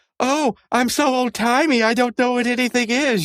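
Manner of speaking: very high, cartoonish put-on character voice. Retelling a cartoon scene where one character mocks another: imitating Pops. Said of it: "impersonating Pops".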